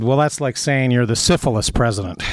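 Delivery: plain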